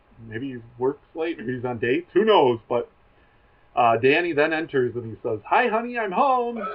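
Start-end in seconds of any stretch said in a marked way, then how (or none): 5.5-6.6 play-acted breezy, playful, very high, slow. Retelling a sitcom scene, Danny greets everyone: imitating Danny being lighthearted. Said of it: "trying to be, like, lighthearted and fun".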